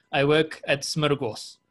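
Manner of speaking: strong-sounding put-on Russian accent. Praising a strong-sounding company name, saying it in a russian accent. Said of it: "if you say it with a Russian accent".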